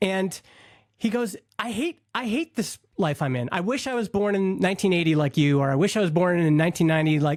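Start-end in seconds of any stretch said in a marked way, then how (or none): none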